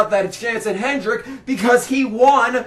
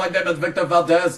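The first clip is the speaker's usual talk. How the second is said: put-on blend of two accents, one of them Indian; 6 semitones lower, 4 dB quieter than usual. Speaking as a character, introducing himself: half Arnold Schwarzenegger, half Indian accent. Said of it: "I'm doing kind of like half Arnold Schwarzenegger and half India. India. Indian".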